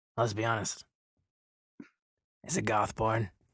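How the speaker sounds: hushed, confidential half-whisper close into an ear. Retelling how a man leaned down to Johnny's ear, retelling a half-whisper. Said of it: "he whispers into his ear and he says".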